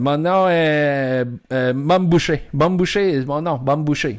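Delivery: French in put-on foreign accent, "est" drawn out. Retelling what a shopkeeper said: imitating accented French. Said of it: "avec un français, avec un accent".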